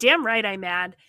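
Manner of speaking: ordinary talk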